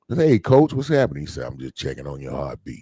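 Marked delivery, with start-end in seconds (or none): 1.4-2.8 very low, rough, rocks-in-the-throat voice. Retelling a phone call, a man imitates the rough-voiced person who called to check on him, imitating a gravelly voice. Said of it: "his voice sounded like he had a".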